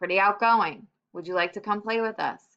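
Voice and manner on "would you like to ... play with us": ordinary delivery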